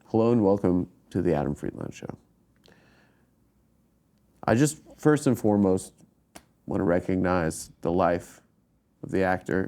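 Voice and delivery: grave, respectful, somber, solemn tone. Giving a comedy show intro, about an actor's death: somber tone. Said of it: "But I said in a somber tone".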